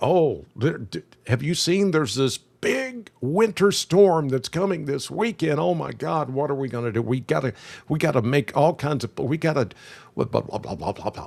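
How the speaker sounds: frantic, rushed, scattered and panicky babbling. Mocking people panicking over a coming winter storm: imitating panicked people. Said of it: "we should not be panicking".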